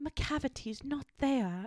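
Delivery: bad fake British accent. Quoting a woman whose voice haunts the speaker's dreams, bad British accent. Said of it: "bad British accent".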